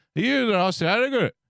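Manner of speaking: put-on thick Glaswegian accent. Retelling what the guy at the stadium's front gate asked, thick Glaswegian accent. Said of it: "very, very thick Glaswegian accent".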